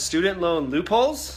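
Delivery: rising tune on "student loan loopholes". Reading out today's title, rising question intonation. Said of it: "I put the inflection in my voice".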